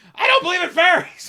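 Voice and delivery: very high, loud, shrieking screamed outburst. Retelling a scene where he screams back at a fairy, retelling a scream. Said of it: "he just screams".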